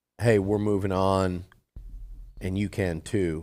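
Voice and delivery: plain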